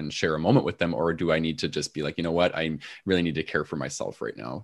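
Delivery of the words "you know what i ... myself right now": ordinary delivery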